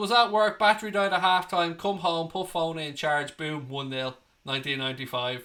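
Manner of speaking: normal talking voice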